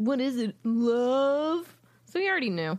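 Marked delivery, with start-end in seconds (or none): 0.0-1.7 put-on snotty tone. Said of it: "he says it in a snotty way".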